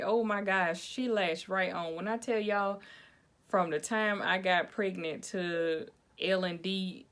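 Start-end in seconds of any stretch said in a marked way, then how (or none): none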